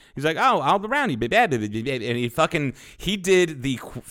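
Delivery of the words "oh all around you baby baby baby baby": put-on fast-talking Cajun accent. Retelling a man's answer about Cajun country: fast-talking Cajun accent. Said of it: "fast talking Cajun".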